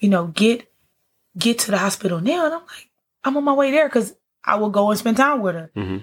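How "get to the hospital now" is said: put-on desperate, panicked pleading through tears. Retelling the phone call from their mom while waiting for the train: retelling a panicked, tearful plea. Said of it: "she's in tears and she's like in panic".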